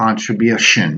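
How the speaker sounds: contribution, main beat on bu. Teaching primary and secondary word stress, main stress on bu in contribution. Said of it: "bu is is where we place the, the most important stress".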